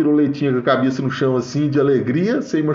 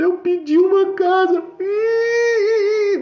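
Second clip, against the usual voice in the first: put-on high-pitched, sobbing little girl voice. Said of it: "desse jeito, sabe? Chorando".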